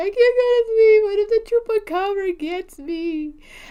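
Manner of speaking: acted, high, sobbing, scared crying voice, pleading. Recalling how the chupacabra legend used to scare them, the speaker acts out: imitating crying. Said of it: "I'll be crying".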